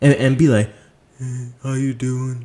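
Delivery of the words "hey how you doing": soft, meek, timid mumble without conviction. Telling listeners to speak up, demonstrating a meek mumble. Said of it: "Don't sit there and mumble".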